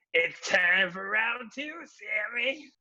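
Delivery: weird, high-pitched, drawn-out, stretched scream. Retelling a match scene where a wrestler screams at Sammy: imitating Kenny Omega's weird scream. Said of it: "the kind of, like, weird voice like that".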